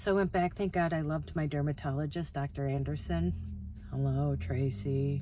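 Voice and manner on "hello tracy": really monotone, low, flat, level voice. Speaker imitates her dermatologist greeting her by name: Dr. Anderson monotone voice. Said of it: "That's how he talked, really monotone".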